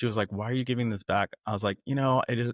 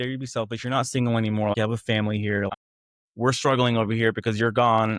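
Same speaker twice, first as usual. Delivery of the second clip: plain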